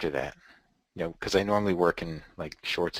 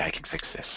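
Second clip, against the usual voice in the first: low, hushed, secretive, confidential whisper; 4 dB quieter than usual. Retelling what the tailor said when he came over: imitating Matthew whispering. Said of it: "and he whispered to me".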